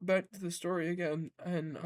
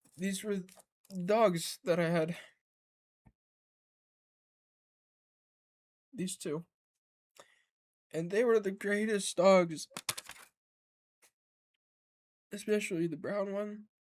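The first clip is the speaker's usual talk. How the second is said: voice fighting back tears; 4 dB louder than usual. Showing a picture of the dogs they had, holding back tears. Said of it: "I'm trying to hold the tears".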